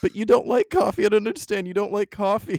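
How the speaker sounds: put-on sincere, guileless voice. Retelling how the character Steven sincerely questions the other character: imitating Steven's earnest tone. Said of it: "he's being so genuine and so earnest, and he's like".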